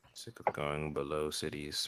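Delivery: muttered under breath. A player's character, asked for a favor by a stranger, mutters under breath. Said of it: "I say that kind of like under my breath".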